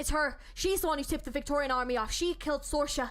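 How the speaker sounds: hard-won, attempted put-on Irish accent. Voicing a character in a scene, attempted Irish accent. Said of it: "struggle to get into the Irish accent".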